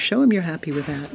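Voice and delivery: ordinary talk, nothing marked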